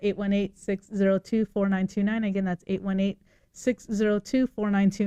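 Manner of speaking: fast, quick rattled-off delivery. Giving the call-in number twice, rattling it off fast. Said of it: "So fast".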